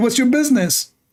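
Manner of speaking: put-on Saudi Arabic accent. Retelling what a man said back to them, in a Saudi Arabic accent. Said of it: "in Saudi accent".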